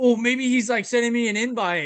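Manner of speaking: high, hyped-up, hopeful voice.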